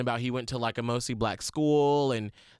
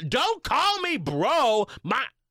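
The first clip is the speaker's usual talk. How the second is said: high, loud, slow, annoyed indignant snap. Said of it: "And I was like".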